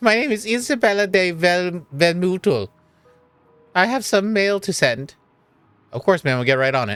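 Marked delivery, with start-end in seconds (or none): 0.0-5.1 put-on high, slow, unhurried, drawn-out old woman voice. Voicing a character who has some mail to send, in an old woman voice. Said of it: "any other w- old woman voice".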